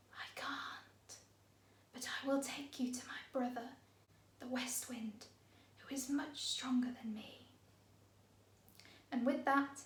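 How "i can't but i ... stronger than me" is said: soft whisper, quieter. Reading a story aloud, voicing the east wind: soft whisper. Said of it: "the wind whispered in a voice as soft as a breeze".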